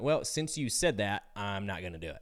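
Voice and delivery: ordinary delivery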